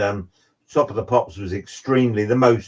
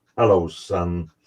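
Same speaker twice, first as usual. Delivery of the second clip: put-on big man's deep, low Texas accent; 5 semitones lower than usual. Retelling meeting a living legend who greeted the speaker: deep texas accent. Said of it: "this real deep Texas accent".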